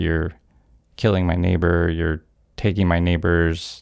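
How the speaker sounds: plain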